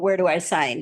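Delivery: ordinary talk, nothing marked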